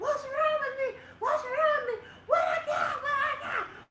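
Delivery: mock shrill, very high, loud repeated screams. Retelling being rushed by masked nurses in a hospital room: retelling own screaming. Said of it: "Now I'm screaming".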